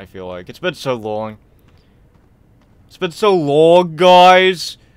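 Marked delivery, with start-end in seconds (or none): 2.9-4.7 put-on New York accent, "guys" drawn out. Complaining to the guys that it's been so long: new york accent. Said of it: "I now have a New York accent".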